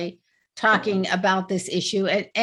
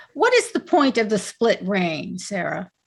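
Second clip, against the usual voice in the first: ordinary talk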